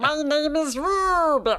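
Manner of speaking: slow, high-pitched cartoon voice. Showing the one cartoon voice learned as a kid: Rubik's Cube cartoon voice. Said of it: "it is Rubik's Cube's voice".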